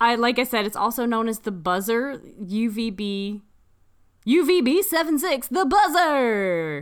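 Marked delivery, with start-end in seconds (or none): 4.3-6.8 on-air broadcast radio announcer voice. Recommending a show and listing its other names, in a radio voice. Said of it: "It's my radio voice".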